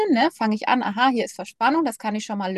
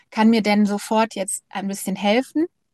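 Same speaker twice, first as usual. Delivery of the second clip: ordinary delivery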